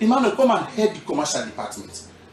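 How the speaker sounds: normal talking voice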